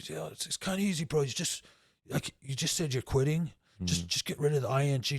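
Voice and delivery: ordinary delivery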